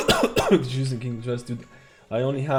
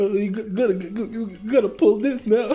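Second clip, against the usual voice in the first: mock panicked stammering, pitched higher; 9 semitones higher than usual. Retelling how a player panicked during a run: imitating Mikel panicking.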